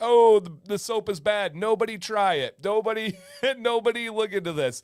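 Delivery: joking, silly sarcastic tone. Retelling a buyer's joking complaint about the soap: imitating Moose being sarcastic. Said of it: "He's saying it to be silly, to be like".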